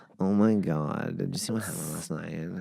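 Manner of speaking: crackling, fried-out, creaky vocal fry. Trying to do vocal fry on purpose for the other speaker: vocal fry. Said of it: "Stop your vocal fry".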